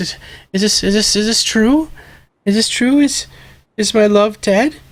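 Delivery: high, tearful, weeping voice with stammering. Voicing a crying mother asking if her love is dead: crying mother voice. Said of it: "his mother is crying".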